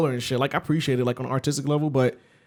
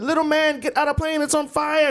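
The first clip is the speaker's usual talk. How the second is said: put-on high-pitched, drawn-out small child's scream; 13 semitones higher than usual. Retelling a little kid at night in his bedroom: imitating a little kid screaming. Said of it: "screaming like a little kid".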